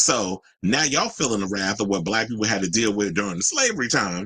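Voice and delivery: ordinary talk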